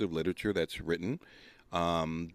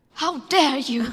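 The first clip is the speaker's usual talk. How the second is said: put-on young girl voice, higher and louder; 8 dB louder than usual. Repeating a famous line to friends: Greta Thunberg impression. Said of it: "that's Greta Van, Gre-, Greta Thun-, Thornburg".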